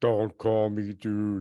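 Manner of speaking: deep, dropped, low heavenly voice. Retelling a prayer, a speaker gives God's reply in a God voice. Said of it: "That's my God voice".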